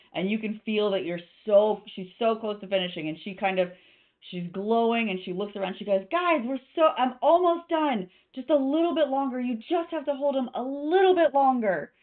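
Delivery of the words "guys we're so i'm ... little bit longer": yelling, pitched high. Voicing a glowing spellcaster urging the party to hold on: character yelling to the party. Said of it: "as she's yelling that at you".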